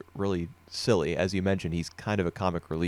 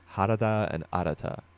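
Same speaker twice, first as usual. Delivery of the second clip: outsider's foreign accent on the Japanese names. Showing how two similar names sound when said with a gaijin accent. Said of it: "a Gaijin accent".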